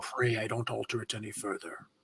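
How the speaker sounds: very low, very quiet, dropped dark voice. Joking about a mayor altering a deal: Darth Vader voice. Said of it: "in a Darth Vader voice".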